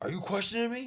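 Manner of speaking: mock very loud, high, shrill angry outburst. Retelling a scene where the dad snaps at the mom: imitating someone pissed off. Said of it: "he's just pissed off".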